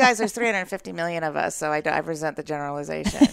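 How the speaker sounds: ordinary talk, nothing marked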